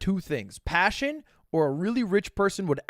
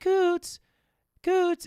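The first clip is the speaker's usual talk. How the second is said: put-on very high little baby voice; 14 semitones higher than usual. Retelling how they call to the pets, in a little baby voice. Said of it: "I'm using my little baby voice".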